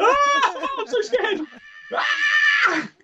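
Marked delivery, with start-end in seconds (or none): 0.0-1.4 mock very high, long-drawn-out screams of terror. Imitating a ghost-show believer screaming his head off: imitating someone screaming in fear. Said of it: "the believer screaming his head off".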